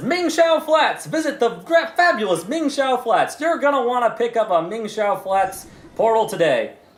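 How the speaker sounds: high, shouting street barker sales call. A game master voices an old man in a booth calling to a player, shouting street barker. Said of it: "He's still shouting that".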